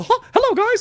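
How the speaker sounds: voice going very high and loud. Doing one of several voices for the others: Mickey Mouse voice. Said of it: "there's also Mickey Mouse".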